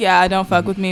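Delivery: ordinary talk, nothing marked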